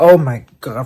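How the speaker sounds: put-on frantic panic. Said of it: "frantic all around the room".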